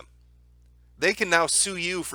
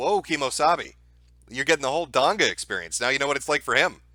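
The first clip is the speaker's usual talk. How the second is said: plain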